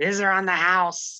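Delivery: loud, booming goblin character voice. Voicing Appleface the goblin as he brings out drinks, in an Appleface goblin voice. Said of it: "I don't know why I sound like this now".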